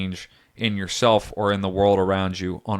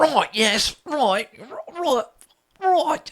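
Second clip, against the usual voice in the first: very high, fake, put-on British accent. Recalling what the speaker kept saying at work meetings: put-on British accent. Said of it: "Everyone at work thought I was British".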